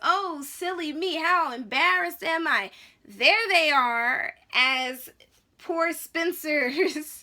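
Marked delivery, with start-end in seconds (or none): 0.0-4.3 loud, condescending, fake sheepish embarrassment. Recounting a stabbing scene, quoting the stabber in a mock-condescending tone. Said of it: "the condescending way that he says".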